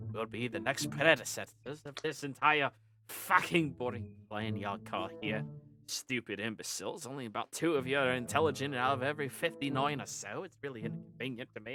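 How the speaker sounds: low, grumbling gnome-like mutter under the breath. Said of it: "they wander off muttering like that".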